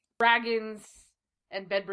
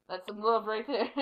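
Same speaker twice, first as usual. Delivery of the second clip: usual speaking voice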